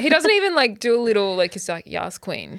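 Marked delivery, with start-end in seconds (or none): 1.9-2.6 low, understated sass with no flourish. Imitating how Colt says yas queen, in a monotone Colt impression. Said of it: "he's so monotone as well".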